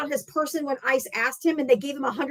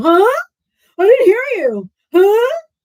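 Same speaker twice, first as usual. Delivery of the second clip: very loud, derisive, swooping, pitched-up, playing-dumb mocking voice; 7 semitones higher, 10 dB louder than usual. Retelling the other speaker's reply in a mocking imitation of them. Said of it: "And you're like".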